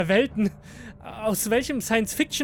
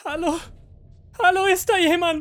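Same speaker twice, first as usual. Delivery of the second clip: high, despairing, all-out desperate scream; 8 semitones higher, 3 dB louder than usual. Narrator, alone in a dark room, calls out, a desperate scream. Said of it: "schrie ich verzweifelt".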